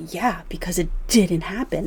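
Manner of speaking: ordinary talk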